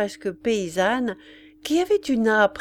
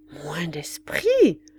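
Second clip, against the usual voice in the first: amazed, stunned, disbelieving tone; 4 semitones lower than usual. The princess echoes the remark in an astonished question. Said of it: "demanda la princesse stupéfaite".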